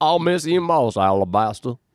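put-on 70-year-old southern lawyer voice, slight southern twang. Leaving for the big city, he says goodbye to the dog Alabaster: old southern lawyer voice. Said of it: "he sounded like a 70-year-old southern lawyer".

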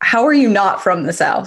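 ordinary delivery

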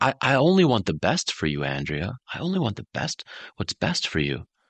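kind, nurturing, gentle, high sing-song tone. Showing how to speak kindly to Andrea, in a gentle voice. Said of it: "I'm talking to you in a gentle voice".

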